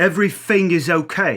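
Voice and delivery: English accent with every th said as f. Explaining English accents, demonstrating a TH-fronting English accent. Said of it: "He's fronting it".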